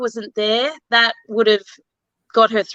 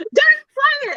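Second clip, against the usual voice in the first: loud, high-pitched scream. Retelling a tense episode watched on TV: retelling her own screaming. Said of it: "screaming at the T V".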